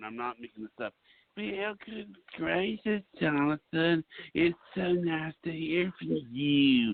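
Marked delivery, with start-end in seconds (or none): 1.4-6.9 slow, drawn-out, unhurried lady's voice. Retelling how a woman sounded on the phone: imitating Teresa Moses on the phone. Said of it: "this is what she sounded like on the phone".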